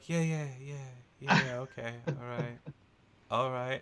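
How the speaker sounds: soft, beaten, deflated voice. Describing a woman pressing back into a door, imitating a defeated voice. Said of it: "And then leaves so defeated".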